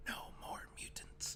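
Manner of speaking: breathy, hushed whisper, barely audible, almost voiceless. Retelling a comic scene where the character whispers: imitating a whisper. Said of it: "And she just whispers".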